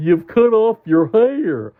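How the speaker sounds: slowly spoken, stretched. Reading a story aloud, voicing Jim's question: asking slowly. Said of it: "asked Jim slowly".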